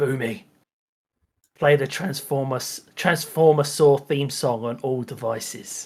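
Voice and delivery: soft, close half-whisper. Voicing Doug half-whispering a command into Boomy's ear: half-whispering. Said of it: "whispers in his ear".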